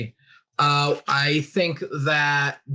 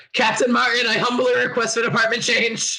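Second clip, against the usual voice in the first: shrill, high-pitched screaming; 9 semitones higher than usual. Playing a character fighting a ship fire, calling behind to the captain: screaming. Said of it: "I'm gonna scream".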